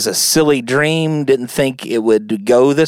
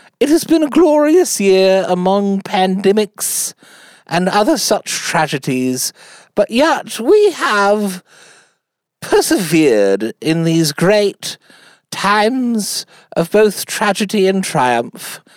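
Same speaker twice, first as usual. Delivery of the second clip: put-on stately, regal British accent, pitched up, words drawn out; 7 semitones higher than usual. Giving a year-end Christmas message to listeners: Queen Elizabeth II impression. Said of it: "I do a pretty good British accent, especially like the Queen".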